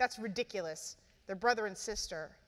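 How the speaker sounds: plain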